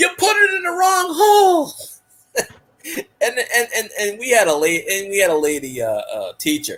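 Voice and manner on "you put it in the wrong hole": acted, very high-pitched, shrill screaming. Retelling a man screaming in an after-school special: imitating a man screaming. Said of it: "he's screaming".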